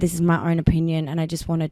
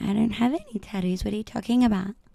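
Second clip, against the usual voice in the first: put-on, high, soft, clueless, dumb-sounding voice; 5 semitones higher, 5 dB quieter than usual. Speaker retells answering people who ask about her tattoos, in a put-on dumb voice. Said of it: "I love doing the dumb voice".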